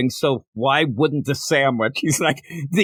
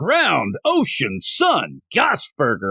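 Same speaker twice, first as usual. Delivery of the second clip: slow, grand, dramatic voiceover announcer delivery. Recounting a man describing a burger, quoting his line in a narrator voice. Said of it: "he goes into his narrator voice".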